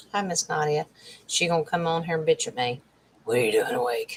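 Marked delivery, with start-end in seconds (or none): 3.2-4.2 very low, growling voice. Imitating Nadia asking what the speaker is doing awake: Nadia's growling voice. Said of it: "that's Nadia's growling voice".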